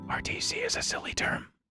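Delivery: hushed whisper. Streamer making an aside while playing, whispering.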